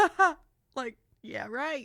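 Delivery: very loud, mocking, scoffing ha ha laugh. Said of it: "he did that laugh".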